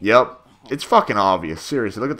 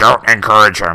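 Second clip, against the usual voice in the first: put-on alien voice, louder; 9 dB louder than usual. Showing the alien voices done for the series: imitating an alien character's voice. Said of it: "I did the voices".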